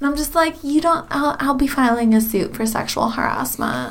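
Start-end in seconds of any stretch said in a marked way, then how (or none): 1.1-3.9 entitled, demanding, complaining tone. Playing a character in a diner scene, taking on a Karen tone. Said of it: "take on a Karen tone".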